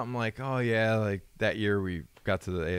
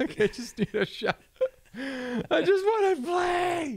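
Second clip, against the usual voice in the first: put-on very high, very slow, drawn-out tearful crying; 4 dB louder than usual. Retelling calls to an agent: imitating own past crying. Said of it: "I'd be calling my agent crying".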